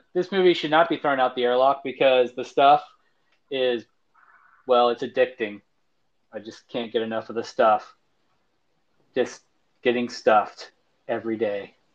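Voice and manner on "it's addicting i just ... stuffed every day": dry, flat, straight-faced delivery. A reviewer saying the movie's stuff is addicting, deadpan. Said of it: "I don't think you deadpanned that enough".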